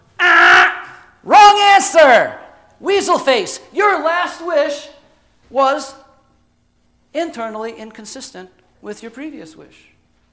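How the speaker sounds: high, loud, smirking, sarcastic taunting. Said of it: "the genie smirks at me sarcastically and goes".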